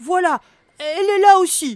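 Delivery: very high, very loud, trembling, terrified voice. Narrator voices a character who stops near a bush, trembling with fear. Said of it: "dit d'une voix tremblotante de peur".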